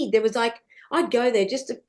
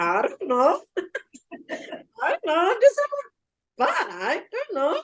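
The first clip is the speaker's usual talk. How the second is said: put-on Indian accent, high and sing-song, throughout; 7 semitones higher than usual. Retelling answering a Scottish man's question, in a put-on Indian accent. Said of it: "In my Indian accent".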